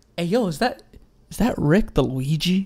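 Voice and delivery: imitated whisper. Retelling how someone quietly pointed out a player: imitating someone whispering. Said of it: "just, like, whispering, he was like".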